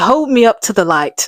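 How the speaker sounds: put-on line in British accent. Retelling a scene, acting out Dorian's line in a British accent. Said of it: "laughing at my um, British accents".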